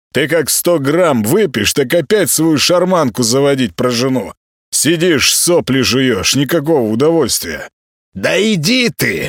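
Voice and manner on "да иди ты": offended, resentful hissing, pitched up. Nikitin, mocked about his drinking talk, hits back; resentful hiss. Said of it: "обиженно прошипел Никитин".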